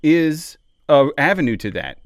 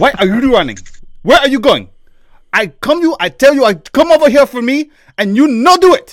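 put-on speaking with a Ugandan accent; 9 semitones higher, 8 dB louder than usual. Improvising a character in conversation, the speaker uses a Ugandan accent. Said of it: "Indian accent's kind of close to like a Ugandan accent".

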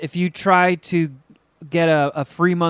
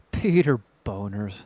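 put-on cartoon teen giggle, lower and quieter; 7 semitones lower, 5 dB quieter than usual. Retelling logging a funny name, giggling like Beavis and Butthead. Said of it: "kept giggling like Beavis and Butthead".

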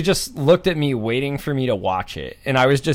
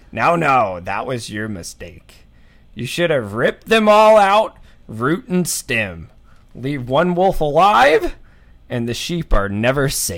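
mock old nobleman voice. Retelling a feast scene line by line: Walder Frey voice. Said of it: "How do you do your Walder Frey voice?".

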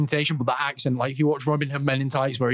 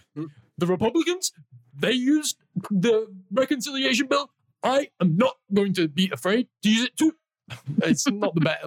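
loud, high-pitched, shouty campaign politician voice; 7 semitones higher than usual. Asked whether you will do it, try out the one you've been practicing, a Bernie impression. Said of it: "I've been practicing my Bernie".

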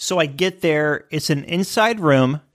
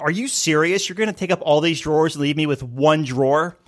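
snippy, sarcastic, snapping delivery. Retelling snapping at a travel buddy: retelling own sarcastic snap. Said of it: "I snapped at him".

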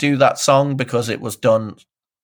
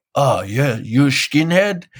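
casual, put-on Dutch accent. Retelling what Onno Cromag replied at his MMA gym, in Onno Cromag's put-on Dutch accent. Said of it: "That's my Dutch accent".

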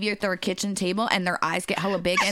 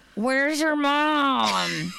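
pitched-up, drawn-out clenched-jaw voice, jaw barely moving; 5 semitones higher than usual. Retelling how an uncle says a name: imitating Uncle Jimmy talking through clenched jaw. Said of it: "not opening his jaw at all".

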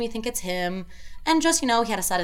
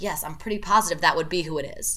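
usual speaking voice

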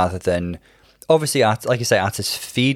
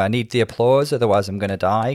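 normal talking voice

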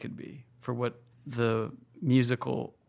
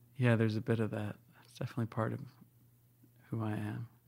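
voice softening, growing quieter and dropping away; 6 dB quieter than usual. Asked about obsessing over tracks, the speaker answers in a quieter, softer voice. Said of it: "Your voice got quieter when you said that".

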